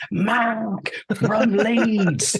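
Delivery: put-on, full-throated, very high yell, word stretched. Describing answering his calls, the speaker acts out shouting at the top of their lungs. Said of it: "at the top of my lungs".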